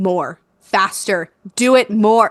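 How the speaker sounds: put-on angry yelling. Retelling asking for water to be poured faster during labor: imitating own angry yelling. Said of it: "I start getting angry and I'm like / yelling".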